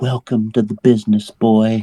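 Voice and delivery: stage whisper, loud enough to be overheard. Leaning down to whisper in his ear for the camera: stage whisper. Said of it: "it's gonna be a stage whisper".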